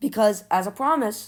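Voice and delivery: voice breaking and cracking mid-phrase. A youtuber tells viewers about a channel promise, voice cracking. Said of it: "that was the worst voice crack".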